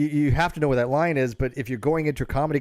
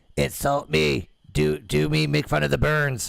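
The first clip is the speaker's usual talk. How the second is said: robotic, creaky, electronic voice-changer voice. Retelling a scene where a man asks to be insulted, voice-changer voice. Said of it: "with a one of those voice changers like this because he has to speak like this".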